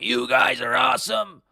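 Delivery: deliberately bad, rough, very high, creaky voice. Acting out what the fighter says whenever he goes to a country, terrible Sean Strickland impression. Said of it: "That was a terrible impression".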